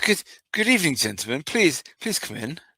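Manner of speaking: posh, polite, welcoming tone. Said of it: "in a posh".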